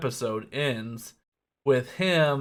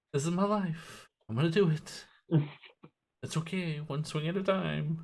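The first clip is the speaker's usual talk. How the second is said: put-on calm, collected voice, higher and quieter; 3 semitones higher, 6 dB quieter than usual. Quoting a calm samurai character: imitating cool, collected character. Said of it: "he's very cool and collected".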